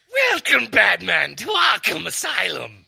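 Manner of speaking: very high, rough growl from the throat. Imitating another's version of a line: high growly throat voice. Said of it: "I can do his version of that voice".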